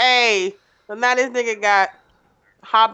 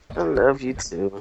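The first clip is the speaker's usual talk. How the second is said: unsure, halting tone. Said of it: "like some hesitation in your voice".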